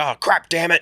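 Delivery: all-out, high, shrill screaming outburst. Retelling a bad movie scene, imitating John Travolta screaming. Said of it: "And just screaming like".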